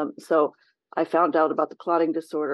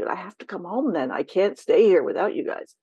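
acted-out crying, tearful, begging, pleading voice; 2 semitones higher than usual. Retelling a late-night call to the husband: imitating own past crying plea. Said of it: "And I'd be crying and saying".

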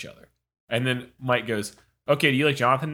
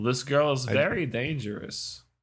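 put-on Eastern European accent, quieter; 4 dB quieter than usual. Quoting an actor's line from a movie scene, in a Borat-like accent. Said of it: "It just kind of sounds like Borat".

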